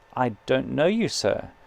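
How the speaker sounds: usual speaking voice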